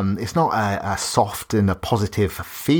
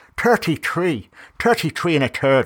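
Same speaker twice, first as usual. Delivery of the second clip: sudden, pitched-up, put-on Irish accent; 7 semitones higher than usual. Announcing the episode number: irish accent. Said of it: "I just went Irish".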